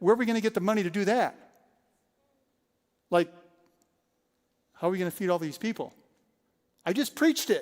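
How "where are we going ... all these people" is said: grave, dead serious, anxious, worried tone. A preacher retells turning to a team member after hearing a dollar figure: retelling a dead-serious question. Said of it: "dead serious".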